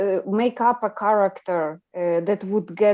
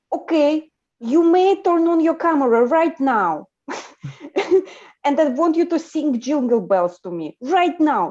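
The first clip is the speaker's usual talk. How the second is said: bossy put-on Russian accent, pitched up; 6 semitones higher, 4 dB louder than usual. Retelling ordering a friend around, put-on Russian accent. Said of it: "So I would lean into Russian accent".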